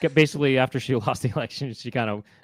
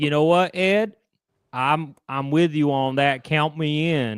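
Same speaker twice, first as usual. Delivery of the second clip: put-on Texas accent. In a made-up exchange with Ed, speaker voices Kamala Harris with a Texas accent. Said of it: "so I got stuck with this accent".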